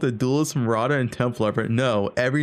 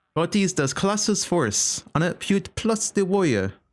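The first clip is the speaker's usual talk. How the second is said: fake, pitched-up, put-on French accent; 6 semitones higher than usual. Joking about warrior builds in a game, slipping into a french accent. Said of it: "That's my French accent".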